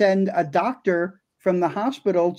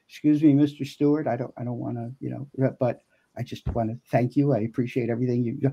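put-on very quiet voice, lower and quieter; 6 semitones lower, 5 dB quieter than usual. Retelling quietly thanking a Hollywood star at a crosswalk: retelling speaking very quietly. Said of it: "so I just say very quiet".

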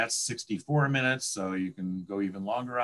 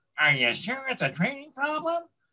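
very high, swooping, whiniest possible voice; 14 semitones higher than usual. Retelling advice from a podium speech, acting out how not to ask, mock-whiny voice. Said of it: "in your whiniest voice".

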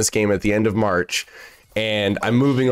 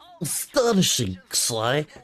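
put-on animated character voice, pitch swooping up and down; 4 semitones higher, 4 dB quieter than usual. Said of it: "I was doing the Bentley voice".

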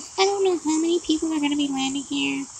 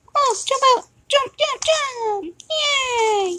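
put-on pitched-up nine-year-old kid voice; 8 semitones higher than usual. Playing a game and keeping up a put-on nine-year-old kid voice. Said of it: "I'm not making fun of little kids at all".

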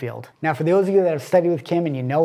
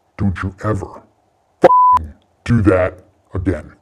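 very low, loud, deep monstrous voice; 8 semitones lower, 6 dB louder than usual. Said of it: "In this low, monstrous [name] voice".

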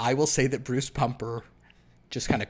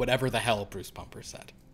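plain

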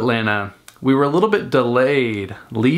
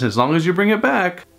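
acted-out, light half-joking teasing, pitched up; 7 semitones higher than usual. Speaker retells lending a phone charger cord, retelling a half-joking remark. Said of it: "half jokingly says".

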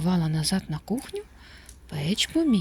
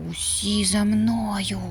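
hushed whisper, much slower; 3 semitones higher than usual. A puppy leads his siblings upstairs after a burglar, whispering. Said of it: "прошепотів Печ".

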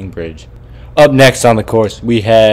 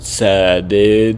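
put-on surfer dude voice. Commentating as the next contestant, Surfer Sam, comes up: surfer impression. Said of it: "I just wanted to do my best surfer impression".

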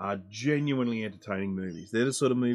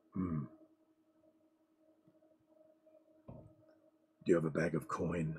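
deep, hushed, soft swooping voice; 5 semitones lower, 9 dB quieter than usual. Show listeners your take on Geralt's dialogue from The Witcher, in a Geralt impression. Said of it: "This is my impression of Geralt".

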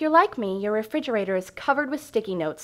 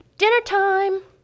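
acted, shrill, very high-pitched holler; 10 semitones higher, 4 dB louder than usual. A mother recalls calling the kids to dinner from the kitchen, retelling an old yell. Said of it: "I used to yell from the kitchen".

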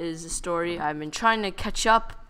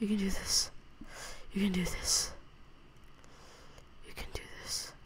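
hushed, breathy whisper under the breath; 11 dB quieter than usual. Playing a game near an Enderman, pepping yourself up, whispering. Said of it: "Why am I whispering like that?".

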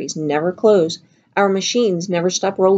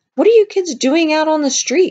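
very high-pitched, insistent, demanding tone; 9 semitones higher than usual. A boy on his machine stops and questions kids out on the street, demanding. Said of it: "He demanded".

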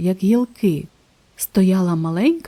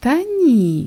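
words carried on a laugh; 4 semitones higher than usual. A jaguar answers an eager question about talking to strangers, laughing. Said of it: "засміялася Колючка".

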